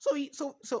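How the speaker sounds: voice breaks, cracking very high. Speaker is talking about someone when the voice cracks. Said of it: "the voice crack".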